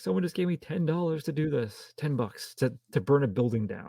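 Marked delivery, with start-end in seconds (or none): 0.0-2.7 mock terrified, panicky, scared-stiff voice. Retelling a movie scene where a henchman is caught: imitating a terrified man. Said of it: "And he was terrified".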